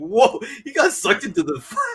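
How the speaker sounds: pitched way up, acted-out sincere, amazed astonishment. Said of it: "so genuinely just like".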